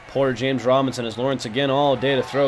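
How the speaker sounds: usual speaking voice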